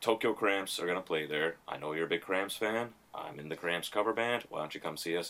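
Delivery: ordinary delivery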